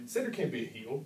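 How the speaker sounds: ordinary talk, nothing marked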